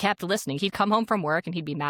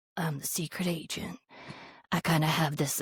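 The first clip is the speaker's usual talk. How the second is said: put-on gritty voice, quieter; 5 dB quieter than usual. Reviewing the voice acting, the speaker nitpicks Agent Blaine: gritty Agent Blaine voice. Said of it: "drag your voice through grit".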